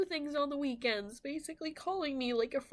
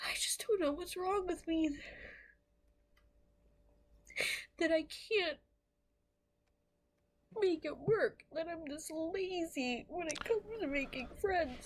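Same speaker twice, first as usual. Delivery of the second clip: weeping through the words, lazy and drawn out; 2 semitones higher than usual. Speaker, already emotional, keeps talking about herself: crying while talking. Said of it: "I didn't think I'd be crying like this".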